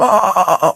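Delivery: high, cracking, crackly, strangled yell. Retelling a film scene where a strangled victim yells: imitating a crackly yell. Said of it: "crackly, like".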